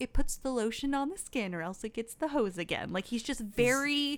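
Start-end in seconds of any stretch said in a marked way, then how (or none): 0.0-2.9 cool, composed, calm, matter-of-fact. Speaker acting out how he really says the quoted line, imitating his calm delivery. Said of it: "he says it so calmly".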